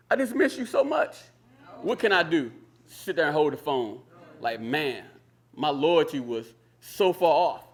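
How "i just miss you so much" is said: put-on very high, baby-like weeping, tearful crying. Retelling a phone call where the mother answered crying: imitating mother crying. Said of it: "My mom answered the phone crying like a baby".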